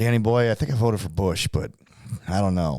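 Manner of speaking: grudging, reluctant, dissatisfied and unhappy dad voice. Retelling a father's answer about who he voted for: imitating dad, dissatisfied. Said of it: "he wasn't gonna be satisfied no matter what".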